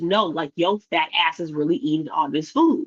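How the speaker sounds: ordinary delivery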